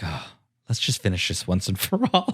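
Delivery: irritated, annoyed, breathy, half-whispered, resolute delivery. Retelling a scene where Bo-Katan storms out: imitating Bo-Katan pissed off. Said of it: "she's all pissed off".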